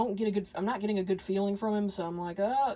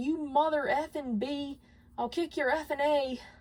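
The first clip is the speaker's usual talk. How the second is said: put-on high, furious, angry cursing yell; 7 semitones higher than usual. Retelling what a road-rage driver yelled: imitating a man yelling. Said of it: "he starts yelling".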